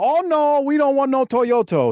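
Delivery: very high put-on Japanese accent. Retelling a wrestler's line to another wrestler: imitating a mocked accent. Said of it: "mocking his accent".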